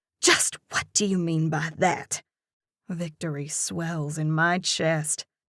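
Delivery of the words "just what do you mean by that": furious, hissed words. Reading a scene aloud, a character answers in anger: hissing. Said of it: "Her words come out in a hiss".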